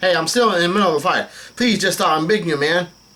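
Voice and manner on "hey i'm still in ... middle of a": plain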